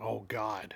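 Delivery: soft, muttered under breath. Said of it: "She drops her keys and mutters".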